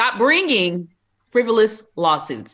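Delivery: forceful, emphatic delivery. Repeating the point after being asked to say it louder: said louder with conviction. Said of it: "Say it with your chest".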